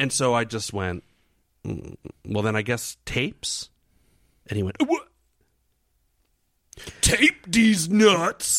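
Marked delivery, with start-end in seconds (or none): 4.8-8.6 very high, put-on elderly old-man voice. Retelling a back-and-forth with a man, quoting his reply in an old man voice. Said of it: "he talked like a, you know, an old man".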